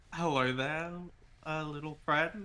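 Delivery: quiet, soft, happy and cheerful voice. Voicing a character greeting a little bird: quiet, happy voice. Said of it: "Marky will come up very quiet, like, happily".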